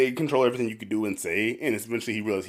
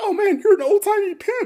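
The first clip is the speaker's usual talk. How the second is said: high, loud mocking tone. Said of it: "just keeps mocking the dude".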